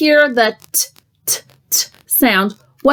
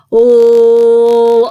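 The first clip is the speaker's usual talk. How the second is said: slow, drawn out and louder; 6 dB louder than usual. Sounding out a word's sounds for listeners, said slowly. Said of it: "we may have to say it slow".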